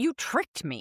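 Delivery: put-on angry toddler voice. Showing how you cannot say the phrase seriously: angry toddler voice. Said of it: "like an angry toddler".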